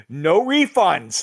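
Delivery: mock shout. Recounting a woman walking away into the back, retelling a shout over her shoulder. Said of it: "she shouts over her shoulder and goes".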